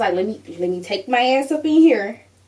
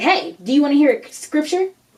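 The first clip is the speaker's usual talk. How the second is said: mild voice, calling out loudly; 4 semitones higher than usual. Retelling what the dude in the pickup truck called out: imitating someone yelling out. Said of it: "he yelled out".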